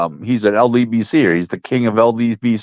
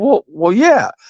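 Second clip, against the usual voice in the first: play-acted, halting, hesitant speech, pitched very high; 9 semitones higher than usual. Retelling a doctor's answer to a question: imitating hesitant reply. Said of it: "he hesitates".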